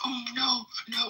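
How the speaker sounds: very high, tearful, crying whimper. Retelling how a woman in labor sounded in the bathroom: imitating whimpering. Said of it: "just whimpering".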